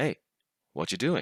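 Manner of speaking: ordinary delivery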